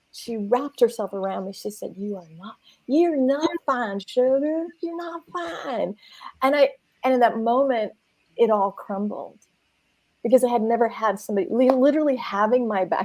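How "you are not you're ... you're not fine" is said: put-on hushed, higher, comforting, insistent Southern accent. Speaker retelling what Jan told them, imitating Jan's Southern accent. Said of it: "an older woman with a Southern accent".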